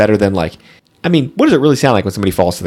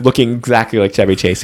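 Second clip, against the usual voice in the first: normal talking voice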